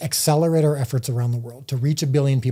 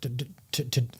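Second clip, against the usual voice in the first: excited stuttering, much quieter and slower; 8 dB quieter than usual. Explaining donations through the Chosen app to viewers, excited stuttering. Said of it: "I'm stuttering a little bit, partly because I'm excited".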